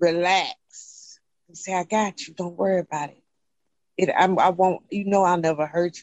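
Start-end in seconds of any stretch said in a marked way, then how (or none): 1.7-6.0 imitated whispering voice. Retelling what a partner said to calm her: imitating a whisper. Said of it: "all that little stuff they whisper in your ear".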